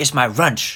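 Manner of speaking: put-on heavy Chinese accent. Retelling what a man said after catching them watching, in a thick Chinese accent. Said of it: "he's got a very thick Chinese accent. He says".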